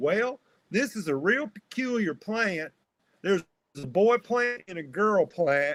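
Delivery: put-on old cowboy Southern accent. Speaker retelling an old cowboy farmer speaking up at a talk, mocking his accent. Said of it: "I'm making fun of the accent".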